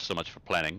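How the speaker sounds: muttered under breath. Narrating a character's remark as they kick the door down: muttered under his breath. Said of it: "he says under his breath".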